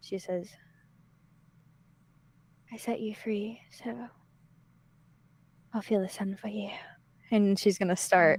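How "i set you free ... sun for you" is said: very quiet, hushed, barely above a hush. Voicing a character leaning over a hole to a buried head: very quiet. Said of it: "very quietly".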